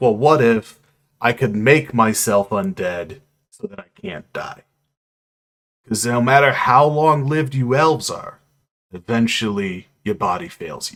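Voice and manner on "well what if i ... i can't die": ordinary talk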